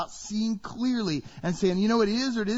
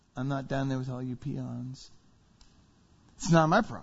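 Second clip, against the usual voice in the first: lofty, dismissive, condescending talking-down tone; 8 semitones lower than usual. A preacher acts out how some people dismiss others' problems: condescending tone. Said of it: "Condescending tone".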